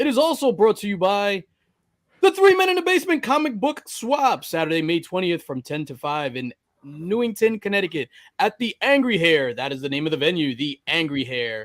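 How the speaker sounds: swooping, animated radio ad announcer voice. Reading out a sponsor message, in a sponsor-read voice. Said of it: "I love [name]'s sponsor voice".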